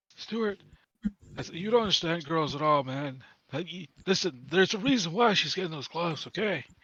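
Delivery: hushed, half-whispered stage whisper. In a tabletop game, a player voices Karash half-whispering to Stuart: Karash half-whispering. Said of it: "Karash whispers to Stuart".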